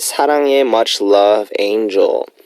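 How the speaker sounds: ordinary talk, nothing marked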